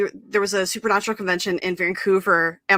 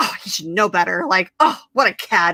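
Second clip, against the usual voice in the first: put-on, livid, indignant outburst. Retelling the speaker's mom reacting to a driver flirting, retelling a livid outburst. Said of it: "who is like legit livid".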